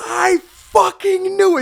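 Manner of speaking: shrill, booming, very loud, high, drawn-out scream. Retelling how a friend reacted to pregnancy news: imitating Brandon screaming. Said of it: "Stood up and screaming across the room".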